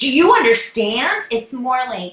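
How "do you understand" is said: very loud, forceful, domineering delivery. Showing how people often ask this question, in a forceful, controlling tone. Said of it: "It's usually in like a controlling kind of way. Like".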